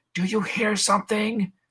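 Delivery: very loud, high, drawn-out call. Retelling characters sneaking backstage, imitating someone asking loudly. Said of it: "very loudly like".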